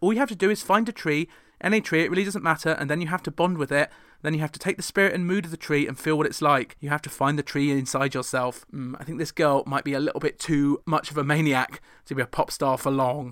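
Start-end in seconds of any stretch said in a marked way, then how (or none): none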